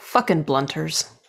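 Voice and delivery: low, hushed mutter under the breath. Voicing a character reacting to a newcomer: muttering under breath. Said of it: "under my breath, I just, like, mutter".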